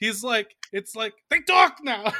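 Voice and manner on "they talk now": very loud, high, cartoony sitcom-style delivery. Imitating a movie line's delivery: George Costanza delivery. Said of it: "delivers it exactly like George Costanza".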